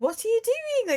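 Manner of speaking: high-pitched, silly squeaky voice. Recalling her popular joke YouTube video, doing the Peppa Pig voice. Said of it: "she really did the like the voice".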